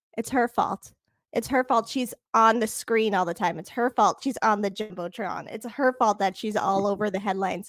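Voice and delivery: plain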